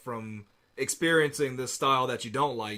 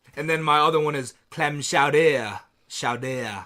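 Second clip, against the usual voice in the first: bad, poor put-on French accent; 7 dB louder than usual. Showing off to a friend, he says food words in a bad French accent. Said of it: "You're not even saying that anywhere close".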